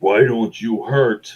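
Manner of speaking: speaking as a giant. Narrating a fight, voicing a giant who speaks to the player. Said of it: "she says in giant".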